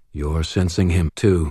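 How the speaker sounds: plain reading voice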